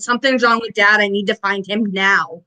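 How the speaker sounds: ordinary delivery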